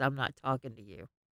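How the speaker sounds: soft, sulky aside, turned away.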